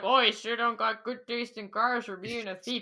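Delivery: loud, fake Canadian accent. Retelling a cop's remark about a car thief: imitating a canadian accent. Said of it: "He sounded Canadian".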